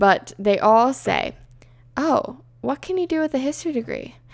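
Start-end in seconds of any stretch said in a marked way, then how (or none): 2.0-4.1 most condescending tone possible, high pitched. Speaker quoting what people always ask about a history degree, imitating a condescending tone. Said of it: "In like the most condescending tone".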